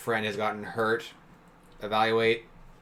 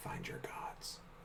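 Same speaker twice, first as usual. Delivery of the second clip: soft, breathy whisper. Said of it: "I whisper".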